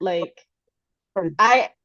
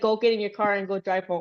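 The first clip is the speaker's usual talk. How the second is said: ordinary delivery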